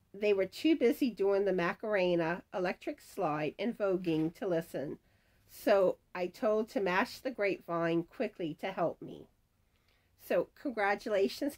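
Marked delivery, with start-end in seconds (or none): none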